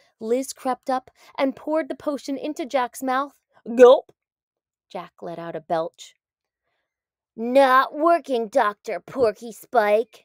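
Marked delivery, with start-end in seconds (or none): 7.4-10.1 slow, spat-out delivery. Jack, after the doctor's potion fails, speaks to the doctor: spat. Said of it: "he spat".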